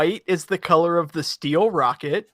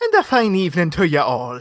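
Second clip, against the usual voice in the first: sing-song, put-on Irish accent; 3 dB louder than usual. Guest being introduced at the start of the show, greeting everyone in an irish accent. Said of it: "are we not doing Irish accents for Saint Patrick's Day?".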